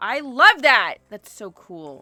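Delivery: shouting with excitement. Chatting with someone, reacting with excited yelling. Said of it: "Sorry for yelling".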